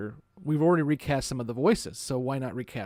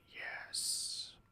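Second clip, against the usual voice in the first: put-on alien voice, much quieter. Retelling how someone answered with a one-word reply; Kosh voice. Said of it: "in his best Kosh voice".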